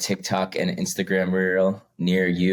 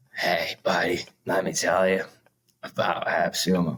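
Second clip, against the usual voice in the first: scratchy chain-smoker voice. Showing how a cold sales call would sound: Jack Nicholson voice. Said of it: "Jack Nicholson. It's kinda, like, scratchy".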